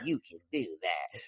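low, soft dismissive tone.

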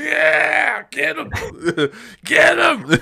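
play-acted very high, slow, creaky, rough scream. Retelling cheering while watching a movie: imitating screaming at a screen. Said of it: "screaming at the fucking screen".

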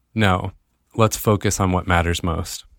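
normal talking voice

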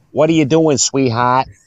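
put-on Boston accent. Retelling what a bartender from Boston said to her, Boston accent impression. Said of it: "she's from Boston".

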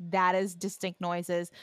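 ordinary talk

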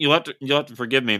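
talking with mouth full. Podcast host apologizing to the other host while eating a cookie, mouth full. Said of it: "mouth is full".

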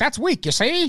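mock newsreel announcer voice. Imitating the author's recorded tapes: imitating old newsreel announcer voice. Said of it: "he sounds like he's delivering news reports about Nazi Germany".

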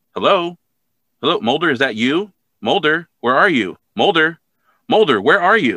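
increasingly worried calling out. Retelling a show's ending, imitating Scully growing concerned and louder. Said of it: "there's more concern in her voice, and her voice is getting louder".

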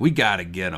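ordinary talk

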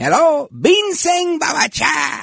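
put-on very high, swooping, thick Cuban accent. Imitate the old guy answering the barbershop phone, Manny's thick Cuban accent. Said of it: "He had a thick Cuban accent".

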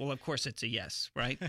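ordinary talk, nothing marked

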